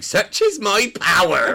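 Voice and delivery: very high, very loud, very slow put-on Cornish accent. Retelling a stage crew member dressed as a fairy, in cod Cornish accent. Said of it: "he did this cod Cornish accent going".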